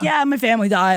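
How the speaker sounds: breezy, nonchalant tone. Retelling a TV contestant mentioning his family died: imitating Leo, not sad. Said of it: "doesn't seem, like, that sad about it".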